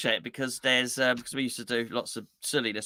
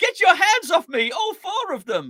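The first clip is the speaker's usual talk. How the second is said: put-on woman screaming, higher and louder; 6 dB louder than usual. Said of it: "And she's screaming".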